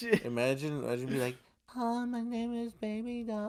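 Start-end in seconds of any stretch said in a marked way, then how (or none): 1.7-3.5 very high-pitched, slow put-on voice. Imagining a man trying a voice for Sucker Punch: high-pitched put-on voice. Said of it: "trying to do like the high pitched voice".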